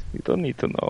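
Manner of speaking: whispered put-on Russian accent. Answering others who question the voice: put-on Russian-sounding voice. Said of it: "It sounds Russian to me".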